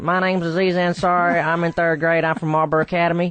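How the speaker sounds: high-pitched put-on South Carolina accent. Retelling how he sounded introducing himself in third grade: imitating a south carolina accent. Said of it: "sounds like, you know, a forty-year-old guy that works at a gas station in McCall, South Carolina".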